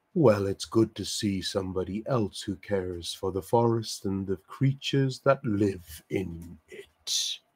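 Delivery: deep, manly masculine voice. Storyteller voicing a creature speaking right beside the listener; deep masculine voice. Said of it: "you suddenly hear this deep masculine voice right beside you".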